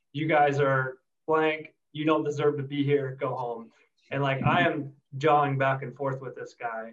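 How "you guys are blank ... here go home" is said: ordinary talk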